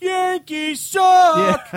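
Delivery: put-on very high, very loud, shrill drunken yell, "suck" drawn out. Retelling drunk fans behind him at a ballgame: imitating drunk fans yelling. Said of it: "They just kept yelling".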